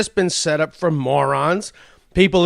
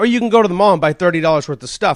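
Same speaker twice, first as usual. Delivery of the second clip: ordinary talk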